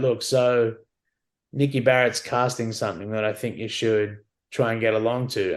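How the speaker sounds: plain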